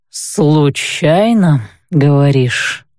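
drawled with strange, drawn-out intonation. Kyle replies to her, drawled with a strange intonation. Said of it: "С какой-то странной интонацией протянул Кайль".

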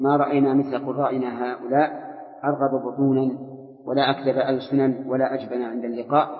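ordinary talk

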